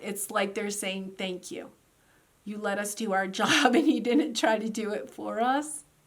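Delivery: teary, moved, tearful voice. Giving a tarot reading to listeners, tearing up. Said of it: "I'm literally tearing up".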